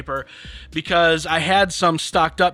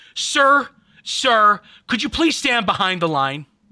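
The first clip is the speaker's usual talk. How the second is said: play-acted, firm, stern voice, pitched up; 5 semitones higher, 3 dB louder than usual. Retelling how a person from Giant asked him to step back, mock-stern voice. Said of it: "like in a stern voice".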